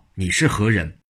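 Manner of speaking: ordinary delivery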